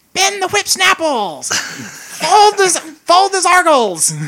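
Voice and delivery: very high, swooping, drawn-out screaming. Playing a goblin sailor named Zugray shouting orders: screaming orders. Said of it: "Zugray just starts screaming out".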